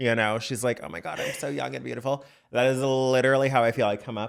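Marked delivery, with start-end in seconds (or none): 0.8-2.2 rough, high, creaky, gloating wicked-witch voice. Acting out a witch who ate a girl's heart: witch voice gloating over youth. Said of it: "Like a witch eating a girl's heart".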